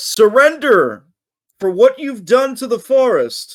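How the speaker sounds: very high-pitched shouting giant voice. Game master voices the wood giant shouting at the players. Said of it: "the wood giant shouts".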